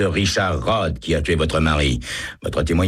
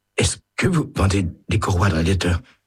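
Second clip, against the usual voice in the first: faint, weak, terrified, rushed croaking voice; 2 semitones higher than usual. A young man, facing a witness, finally forces out a question in a weak, terrified croak. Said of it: "d'une voix faible et terrifiée qui ressemble à un croassement".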